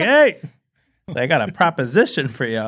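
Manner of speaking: mock hollering, stretched out, slow and sing-song. Retelling a friend calling up to people above: imitating someone hollering. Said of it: "starts hollering up to him like".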